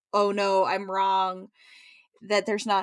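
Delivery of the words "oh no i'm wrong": very slow, drawn-out, alarmed, panicked tone. Retelling a character's realization of a wrong guess: imitating a panicked voice. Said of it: "they're so panicked".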